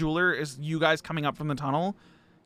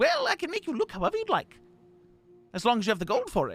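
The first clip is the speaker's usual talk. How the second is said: prim, proper gnome voice, higher; 8 semitones higher than usual. Voicing a prim and proper gnomish fellow greeting a customer: prim and proper gnome shopkeeper. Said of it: "prim and proper, standing up straight".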